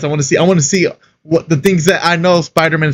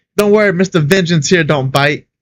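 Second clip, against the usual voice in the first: ordinary talk, nothing marked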